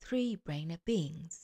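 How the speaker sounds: ordinary delivery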